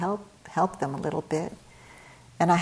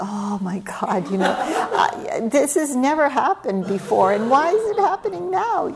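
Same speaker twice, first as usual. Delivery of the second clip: high, rising, panicked voice. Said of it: "I'm like".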